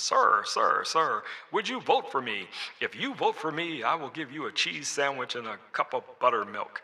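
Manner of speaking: 1940s-style voice through a megaphone. Speaker demonstrating a voice effect of someone calling down a hall, 1940s megaphone voice. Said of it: "sounds like somebody from the forties is talking into a megaphone".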